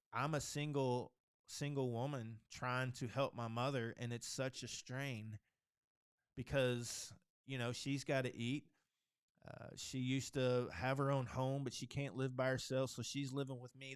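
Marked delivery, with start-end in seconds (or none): none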